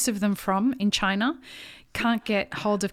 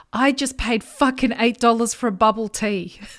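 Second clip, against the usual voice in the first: put-on angry voice, slower; 6 dB louder than usual. Retelling a friend's phone call, acting out how angry he was. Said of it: "He's angry".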